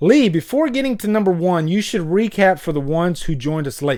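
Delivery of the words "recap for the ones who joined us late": ordinary talk, nothing marked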